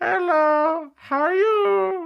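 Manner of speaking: very high, very slow, loud character voice. Showing how the toes talk when wiggled: talking toes voice. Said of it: "I do the talking toes".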